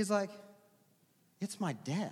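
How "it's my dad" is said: scornful, dismissive, condescending tone. Retelling the son's reply to another kid: imitating a scornful reply. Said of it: "looks at the kid like he's the dumbest kid".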